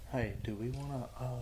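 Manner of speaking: barely audible, very slow, dragged-out, hesitant words. Speaker asking companions a question while filming, talking very slowly. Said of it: "Why are you talking so slow?".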